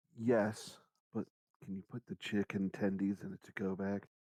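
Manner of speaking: hushed stage whisper, as if into an ear. Answering a waiter in character by half-whispering the order: half-whispering in someone's ear. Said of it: "I'm gonna whisper in his".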